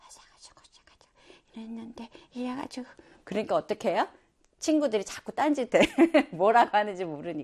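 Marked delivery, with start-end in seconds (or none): 0.0-2.9 timid, soft, too-quiet whispered mumble. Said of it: "그리고 목소리는 작아".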